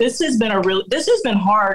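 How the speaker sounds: ordinary talk, nothing marked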